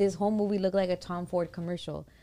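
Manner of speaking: usual speaking voice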